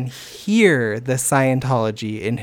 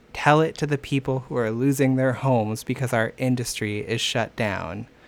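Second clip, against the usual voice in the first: ordinary talk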